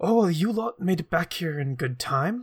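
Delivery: grumpy, grudging, grouchy delivery. The Glow Hearts leader greets the party on their return; grumpy Lady Cave Dark. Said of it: "I know she's just kind of grumpy, / So walking out of this place is [name], this woman in armor with that blue necklace with the glowing blue crystal amulet on it. And weapons on her back. She looks r".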